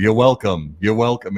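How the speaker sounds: put-on thick New York accent. Retelling a comedy roast bit with the quoted line: Bill Hader thick New York accent. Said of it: "Super thick New York accent".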